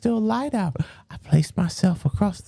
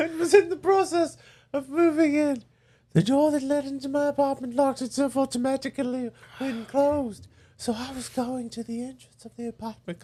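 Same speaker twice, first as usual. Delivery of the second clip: light British accent, voice pitched up; 5 semitones higher than usual. Reading a first-person story aloud to listeners: slightly british voice. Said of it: "She's a little British".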